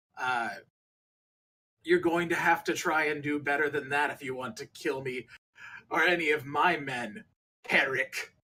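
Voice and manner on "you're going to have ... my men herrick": defiant, taunting tone, mildly raised voice. A character leans over the ship's bow and shouts down to Herrick; booming voice. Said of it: "shouts down to you in this booming voice".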